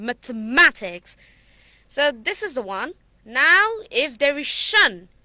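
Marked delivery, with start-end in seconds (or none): 0.0-1.2 third syllable "ma" strongly stressed in "mathematics". Counting syllables in a word, then stress on ma in mathematics. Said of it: "we are gonna give stress on ma".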